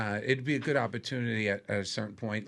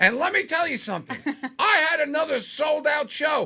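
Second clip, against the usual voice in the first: belted out high and very loud; 9 dB louder than usual. Retelling how a friend brags from a cruise ship: imitating Mike Marino. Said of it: "He goes".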